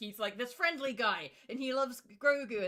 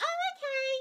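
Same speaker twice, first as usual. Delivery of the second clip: put-on little old British woman voice, very high-pitched. Speaker acts out a woman's reply in a scene being described; old british lady voice. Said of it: "make her sound like she's this old British cauliflower lady".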